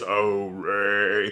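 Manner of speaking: very deep voice with one word drawn out long. After noting how deep Brad Garrett's voice is, the speaker does a Brad Garrett deep voice impression. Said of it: "has a very deep voice".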